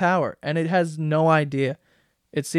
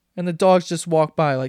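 ordinary talk

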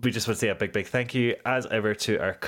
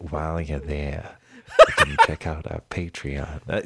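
spooky put-on voice, much lower, slower; 6 semitones lower, 5 dB louder than usual. Podcast host doing the show's plugs, Vincent Price voice. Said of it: "You sound like Vincent Price".

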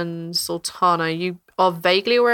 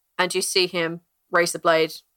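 usual speaking voice

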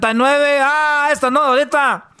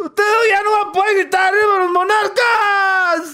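fake sobbing, higher pitch; 7 semitones higher than usual. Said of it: "No chille".

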